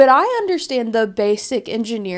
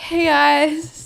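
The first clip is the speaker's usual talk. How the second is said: mock nervous chuckle, higher pitch; 5 semitones higher than usual. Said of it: "It's like a nervous chuckle".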